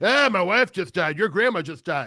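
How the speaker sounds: put-on sad, grieving old grandpa voice. Describing a scene where a grandpa talks to his grandson: sad old grandpa. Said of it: "It's like it starts off very sad".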